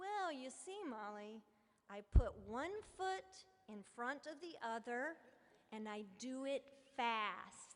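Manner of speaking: very slow, deliberate, careful word-by-word delivery. A speaker quoting an eight-year-old girl's answer to her, said very slowly. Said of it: "said very slowly to make sure I completely understood".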